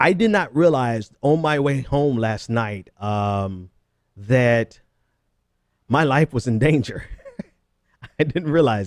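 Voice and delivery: words broken up by laughter. Starting a scary story for listeners, laughing while talking. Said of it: "I'm sorry, I'm laughing".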